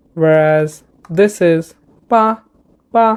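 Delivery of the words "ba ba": ba ba held on a flat level tone, no fall. Explaining a notation marked flat: level flat tone on ba ba.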